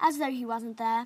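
plain reading voice

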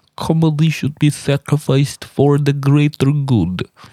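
put-on Russian accent. Making fun of woke culture: put-on Russian accent. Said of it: "that Russian accent".

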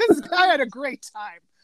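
mock joyful, heartfelt, sincere-sounding delight. Retelling a cartoon line said with such joy: imitating Kronk's joy. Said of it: "he says it with such joy".

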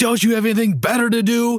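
acted, very high, sudden shouted snap-back. Retelling a brush-off from a football player: imitating someone yelling. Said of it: "he just yells".

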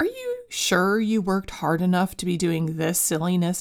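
mock dismissive, brushing-off tone of voice. Voicing the inner critic that speaks up during play: imitating a dismissive inner voice. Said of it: "just as dismissive in tone".

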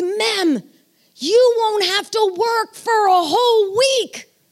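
gushing, excited, drawn-out delivery. Retelling what Layla said about the vacation: imitating Layla's excitement. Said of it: "all excited".

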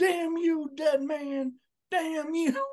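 very high, eerie, slow, drawn-out creepy delivery. Quoting a wrestling manager's famous soundbite from a match: Paul Bearer impression. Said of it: "the soundbite of Paul Bearer in this match where he's like".

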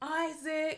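high, screaming call. Mother retells searching a busy road for her lost son, retelling screaming his name. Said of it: "I'm screaming".

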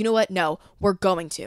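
plain

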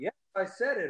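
ordinary talk

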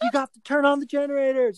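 very high-pitched, loud yell. Retelling getting the kid into the car, calling to the wife: imitating own yelling. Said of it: "I'm yelling to my wife".

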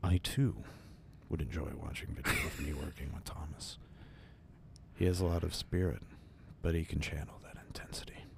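hushed, breathy near-whisper put-on voice. Announcing an impression, the speaker delivers a line in Stanley Kubrick voice. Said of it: "I'm going to do it in my Stanley Kubrick voice".

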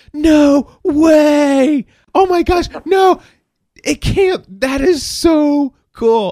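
very high, loud, very slow, drawn-out stunned disbelief. Retelling a caller's reaction on the phone: imitating someone freaking out. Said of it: "he began to freak out".

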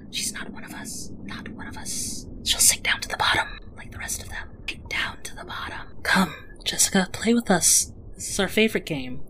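whispering chorus of hushed siren voices. Narrating as sea sirens surround Jessica and call out to her, hushed voices. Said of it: "you can hear over the water in their hushed tones".

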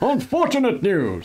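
mock serious newsreader, high, slow and grave.

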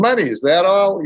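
put-on high, twangy Midwestern accent. Retelling what a close friend said when he called, in a midwestern twang. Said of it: "in that Midwestern twang".

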